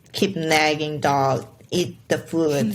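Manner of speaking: usual speaking voice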